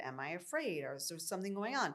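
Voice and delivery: ordinary talk, nothing marked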